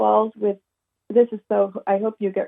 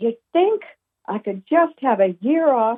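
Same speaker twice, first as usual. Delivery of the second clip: mild yell, called out; 3 semitones higher than usual. Retelling what was yelled up to God in the bathroom: retelling a yell. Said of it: "And I yelled out".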